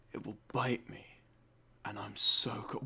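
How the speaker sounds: very quiet, soft, sexy sultry delivery. Mocking a voice actor's delivery of a line, mocking a sexy voice-actor line reading. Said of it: "Why sexy, voice actor?".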